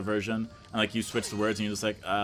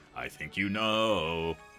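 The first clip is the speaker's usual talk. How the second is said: put-on sing-song voice, lower pitch; 3 semitones lower than usual. Voicing Bowser answering Mario in the bedroom: singsong Bowser voice. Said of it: "why are you doing all singy-songy?".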